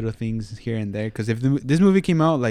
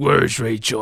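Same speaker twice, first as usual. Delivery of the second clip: dark, gloomy put-on voice; 3 dB louder than usual. Quoting the movie hero's line in his dark gloomy Batman voice. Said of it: "the dark, gloomy voice".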